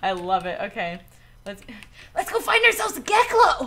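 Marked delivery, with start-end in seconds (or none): 2.2-3.7 raspy, over-energetic, higher cartoon hero voice. Setting off in the game to find a Geklo: Ash from Pallet Town voice. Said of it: "it started off as Ash from Pallet Town".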